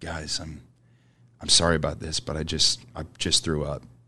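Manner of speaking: put-on soft, sad, halting and sorry-sounding. Retelling a friend's apology for throwing up: imitating a sad friend. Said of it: "he's very sad looking at us like".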